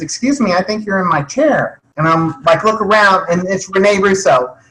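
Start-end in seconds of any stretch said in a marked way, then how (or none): 0.0-1.8 gentle, really soft, quiet voice. Retelling what a woman said after tapping him on the shoulder, really soft voice. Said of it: "I hear this really soft voice that says".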